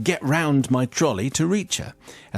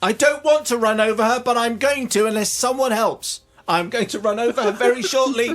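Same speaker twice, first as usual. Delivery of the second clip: put-on shouting, higher; 9 semitones higher than usual. Retelling warning people while a trolley rolls toward someone: retelling own shout. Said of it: "I'm shouting".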